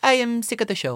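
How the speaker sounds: put-on French-accented English. Retelling a past phone call to a friend for laughs, voicing a caller who phoned in sick, in an imitated french accent. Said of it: "She was French".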